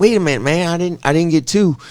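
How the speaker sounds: put-on rural Southern US accent. Imitating the person in front in a store line, put-on redneck voice. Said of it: "I don't know why I always do the redneck voice".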